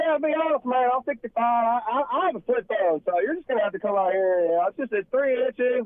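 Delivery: folksy country man talking voice. Retelling what a sixty-five-year-old customer said: imitating a country guy. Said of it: "he's country as hell".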